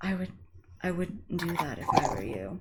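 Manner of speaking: creepy, eerie, very quiet whisper, close to the ear. Voicing a whisper in a character's ear: eerie whisper. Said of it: "he gets a little like eerie whisper in his ear".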